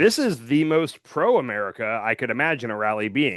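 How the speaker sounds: plain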